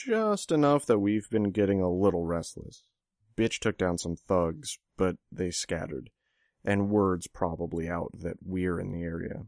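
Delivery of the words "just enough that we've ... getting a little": plain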